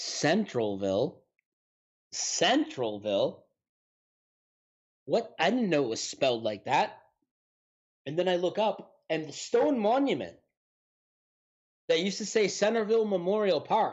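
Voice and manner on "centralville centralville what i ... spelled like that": mock baffled, really confused, puzzled voice. Retelling what you heard him say while you got your food, imitating a really confused voice. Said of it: "in a really confused voice".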